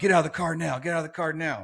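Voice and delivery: insistent, urgent, commanding tone, repeated. Recounting police officers running to the car, quoting their order; retelling officers' orders. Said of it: "telling me to get get out".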